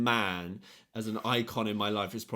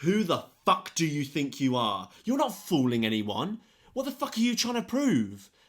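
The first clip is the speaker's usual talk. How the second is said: mock livid, furious screaming, high and loud, losing it; 6 semitones higher, 5 dB louder than usual. Recounting a man screaming at the speaker in class: retelling a furious shout. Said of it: "he just went mental at me".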